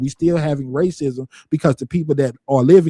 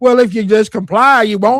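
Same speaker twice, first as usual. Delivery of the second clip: mocking voice, higher and louder; 7 semitones higher, 6 dB louder than usual. Quoting a voice that sounds like people justifying police: imitating people justifying police. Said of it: "I like the voice that he used 'cause it sounds just like the people that be doing".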